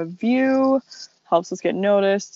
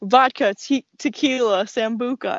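called out high and slow; 5 semitones higher than usual. Telling a joke about getting a promotion, mock yelling at the top of lungs. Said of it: "Why is she yelling at me?".

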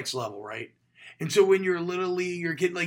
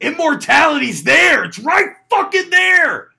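put-on rousing battle yell, higher and louder; 11 semitones higher, 14 dB louder than usual. Quoting Brad Pitt's speech to warriors about to land: imitating Brad Pitt yelling. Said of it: "now I'm yelling at you to take it".

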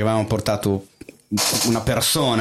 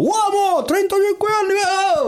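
very high, slow, overeager yell. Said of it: "proprio urlando".

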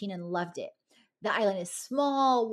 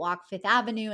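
plain

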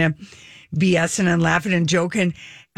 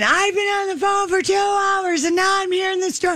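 mock shouted yell, shrill, pitched way up; 13 semitones higher than usual. Retelling how a waiting customer in the store started yelling: imitating someone yelling. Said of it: "he just starts yelling".

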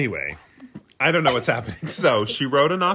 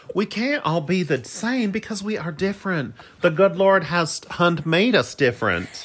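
put-on Southern bumpkin accent, pitched higher; 5 semitones higher than usual. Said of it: "that was Ashley's mom that I was doing an impression of".

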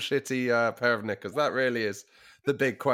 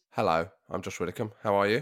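lower, put-on statesmanlike manner; 5 semitones lower than usual. Greeting listeners at the start of the episode: mock statesman-like tone. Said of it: "you sounded quite statesman-like there".

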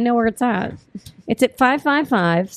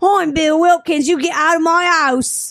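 exaggerated, pitched-up cockney accent; 5 semitones higher than usual. Joking after recalling a man's name, playing that man, in an exaggerated cockney accent. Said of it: "went super cockney there... So I had to play with it".

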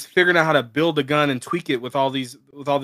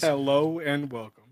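mock smug announcer voice, quieter; 5 dB quieter than usual. Imitating the announcer the others just described: imitating a smug announcer. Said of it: "that announcer who is so smug".

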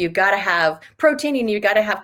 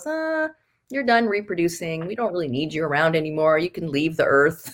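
acted out, full of sarcasm; 3 semitones lower than usual. Speaker explaining muscle loss with age voices the aging body, sarcastically voicing the body. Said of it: "I'm being sarcastic".

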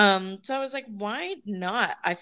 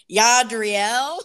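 English-accented speech; 2 semitones higher, 8 dB louder than usual. Trying to pronounce a name, it comes out as English-accented Yadriel.

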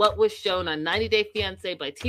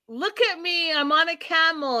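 mock thrilled high excited scream through laughter; 8 semitones higher than usual. Quoting a woman from an earlier story, imitating excited screaming. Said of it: "she's screaming, she's laughing, she's so excited".

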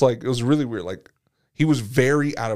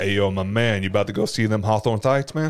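exaggerated, put-on low bass voice; 3 semitones lower than usual. Joking about how funny it would be if he talked in a put-on deep voice. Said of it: "it'd be funny if he had a deep voice like".

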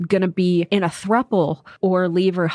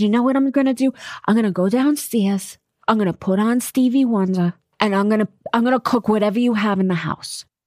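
put-on speaking with a New York accent; 3 semitones higher than usual. Retelling mom's reply when told the nephew is coming over, imitating her new york accent. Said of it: "she has this New York accent still".

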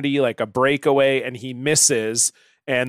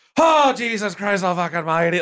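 exclamation delivered in a higher pitch; 6 semitones higher than usual. Retelling how the other commentator reacted: imitating the commentator's exclamation. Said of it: "The other guy's just like".

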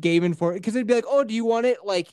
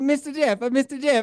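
put-on young child voice, higher pitch; 5 semitones higher than usual. Retelling how a daycare kid came up calling: imitating Miho. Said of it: "he's like".

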